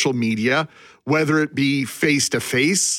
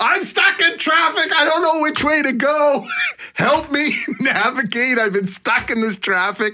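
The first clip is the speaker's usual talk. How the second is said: mock very high-pitched, shrill, complaining yell; 11 semitones higher than usual. Retelling a friend's phone call about traffic: imitating a friend yelling. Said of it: "starts yelling at me about the traffic".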